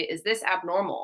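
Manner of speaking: ordinary talk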